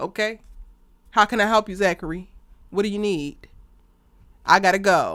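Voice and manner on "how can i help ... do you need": put-on formal, businesslike voice. Imitating Karen speaking formally to Zachary: imitating Karen talking like HR. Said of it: "start talking like H R".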